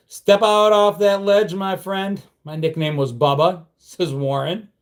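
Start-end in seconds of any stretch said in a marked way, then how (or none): none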